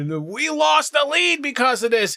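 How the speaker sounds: high, frantic, panicky freaking-out voice. Retelling a team's reaction to missing a challenge: imitating someone freaking out. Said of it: "Will and James freaking out".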